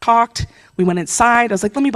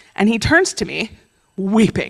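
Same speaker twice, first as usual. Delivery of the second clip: normal talking voice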